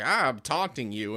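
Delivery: ordinary talk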